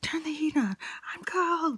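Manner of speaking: mock very high-pitched yelling. Retelling how a passenger yelled at the driver in the car, imitating someone yelling. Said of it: "she starts yelling at me".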